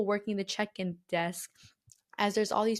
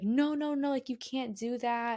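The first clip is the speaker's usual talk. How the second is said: put-on, drawn-out, mild half-yelled scolding; 3 semitones higher than usual. Retelling how a security lady stopped them: imitating someone yelling. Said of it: "the security lady starts yelling at us".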